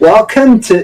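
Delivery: put-on Scottish accent. Trying a British accent on a game welcome line: Scottish accent. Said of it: "Scottish accent, actually".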